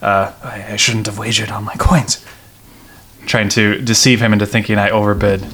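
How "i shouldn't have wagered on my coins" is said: mumbling, quieter and slower. Tabletop player in character, bluffing an opponent about a wager: mumbled under breath. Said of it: "I mumble something under my breath like".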